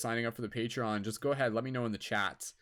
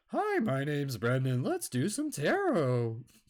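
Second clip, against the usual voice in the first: voice breaking and cracking like puberty; 4 semitones higher than usual. On air after his voice just cracked, showing how he'll sound; mock cracking voice. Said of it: "that's what I'll end up sounding like".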